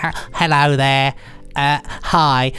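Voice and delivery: mock geeky nerd voice. Mocking how a Doctor Who anorak talks, in a stereotypical anorak voice. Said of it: "people out there that wear actual anoraks and talk exactly like that".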